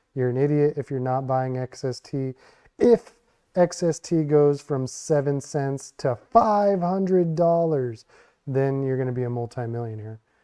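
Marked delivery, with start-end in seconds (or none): none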